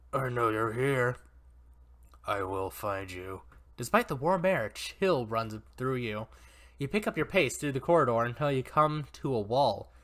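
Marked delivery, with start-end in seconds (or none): 0.1-3.4 low, gruff, rough, mocking taunting voice. Narrator voicing an unseen figure calling through a maze, gruff taunting voice. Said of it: "a gruff, taunting voice".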